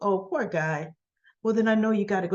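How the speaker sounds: normal talking voice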